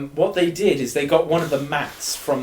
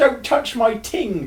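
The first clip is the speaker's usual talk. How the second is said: acted-out high squealing shout at the top of the voice; 9 semitones higher than usual. Retelling a changing-room fight, imitating someone squealing and shouting. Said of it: "squealing, shouts ... at the top of his voice".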